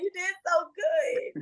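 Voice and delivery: put-on shrill, high, stretched-out loud scream. Retelling how they congratulated a friend: retelling a loud scream. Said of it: "I screamed so loud".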